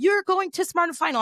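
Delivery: loud put-on scream. Retelling screaming at the kids: retelling screaming at kids. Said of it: "I'm screaming my kids".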